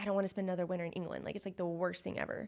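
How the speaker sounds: usual speaking voice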